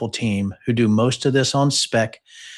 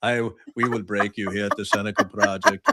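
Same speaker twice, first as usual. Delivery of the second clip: put-on Russian accent, boxer style; 3 semitones lower, 4 dB quieter than usual. Speaker suddenly going into an accent mid-conversation, Ivan Drago accent. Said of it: "like Ivan Drago".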